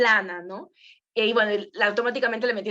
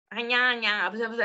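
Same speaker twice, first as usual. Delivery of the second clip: nasal voice, talking through the nose. Showing the flat voice to avoid: demonstrating a nasal voice. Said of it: "una voz nasal".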